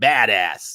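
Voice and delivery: American way of saying it. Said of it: "I have to say it in an American accent".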